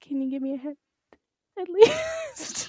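tiny put-on voice, very high and sing-song. Quoting what a woman said to a man, in a little voice. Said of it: "That's your little voice".

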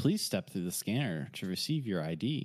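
recorded, automated terminal announcer voice. Voicing the vault's system as players reach the scanner: announcer voice. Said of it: "an announcer voice that comes on and says".

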